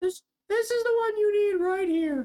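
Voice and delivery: very high, squeaky voice with swooping pitch. Voicing a woman offering a ring, sounding like the Gingerbread Man from Shrek. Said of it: "I sound like the fucking gingerbread man from Shrek".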